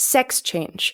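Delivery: heavy stress on the word sex. Showing English stress in the phrase sex change: stress on sex. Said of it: "we stress the first syllable of that phrase".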